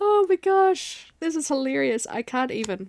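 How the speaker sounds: words broken up by laughing. Reacting to something found hilarious, laughing while talking. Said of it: "I'm laughing".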